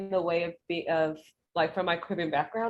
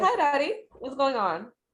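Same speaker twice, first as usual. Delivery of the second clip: put-on native Caribbean accent, pitched up; 6 semitones higher than usual. Retelling how they greet their dad at home: caribbean accent. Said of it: "I'll use my accent whenever I talk to them".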